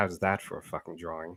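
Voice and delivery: mumbled under breath. While rewinding time, the player's character speaks so no one hears: Umber muttering under breath. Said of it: "under my, my breath, low enough where no one can hear me".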